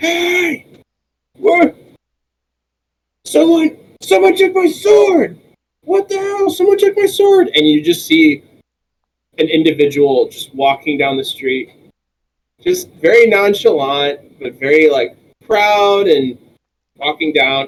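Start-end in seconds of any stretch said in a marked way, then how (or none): 0.0-7.5 very high, far-off, angry yelling. Narrating a scene to the players, voicing someone shouting from a distance. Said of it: "a voice shouting from like a distance".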